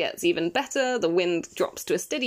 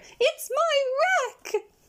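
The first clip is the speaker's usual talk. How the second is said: very high, slow, drawn-out, thrilled, excited cry. Reading a book aloud, voicing George's line in a high, excited voice. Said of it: "in a high, excited voice".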